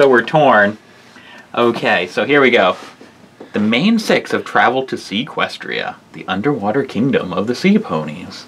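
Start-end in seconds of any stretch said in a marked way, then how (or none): 3.5-8.5 soft, storybook narrator voice, story-reading delivery. Reading a story aloud to a listener, narrator voice. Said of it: "Do you like my narrator voice?".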